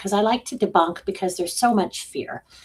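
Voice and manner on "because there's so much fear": ordinary talk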